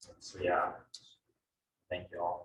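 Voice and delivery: soft, choked-up, emotional voice.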